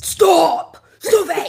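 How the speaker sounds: mock very loud, shrill, demonic angry shouting. Speaker describes how Elowen switches voice when upset, imitating Elowen's angry voice. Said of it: "she uses a different voice".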